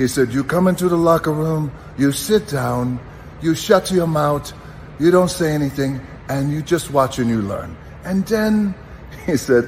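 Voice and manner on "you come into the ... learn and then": put-on high, pitched-up Iranian accent. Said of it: "he had this great accent".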